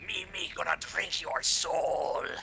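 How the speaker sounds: high, strained, rasping rat-like hissing creature voice. Storyteller voicing a long-nailed creature speaking to the listener, hissing rat-like voice. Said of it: "hissing at you in this horrid rat-like voice".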